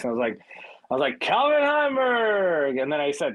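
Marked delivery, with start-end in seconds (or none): 1.2-2.8 put-on cartoony yell, much higher. Recounting yelling a name and laughing hard; retelling a cartoony yell. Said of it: "yelling Calvin Heimberg in a voice like almost like a cartoony voice".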